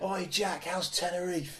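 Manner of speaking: very slow, drawn-out, high jeering heckling shout. Retelling what they love shouting at him: imitating a shout. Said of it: "I just love shouting Tenerife at him".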